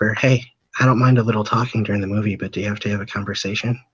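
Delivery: imitated whisper. Retelling leaning over to a kid talking in a movie: imitating own whisper. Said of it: "I lean over to him and I whisper".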